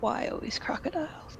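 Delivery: mumbled under breath. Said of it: "mumble her breath".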